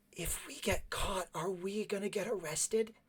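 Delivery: loud, high stage whisper that carries. A character hiding in a closet asks the companions, in a loud whisper. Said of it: "Cleven says in a loud whisper".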